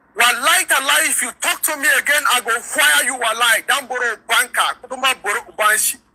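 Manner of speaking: acted shouting voice. Retelling a soldier's threat heard during an argument: imitating a loud voice. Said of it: "one kind loud voice".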